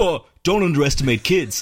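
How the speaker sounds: mocking put-on voice. Imitating a camp of online commenters: mocking put-on voice. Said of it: "There's that voice".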